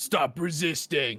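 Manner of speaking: high, mild half-shout. Voicing an attacker who hits a player with a bat: shouting. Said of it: "he just shouts to you".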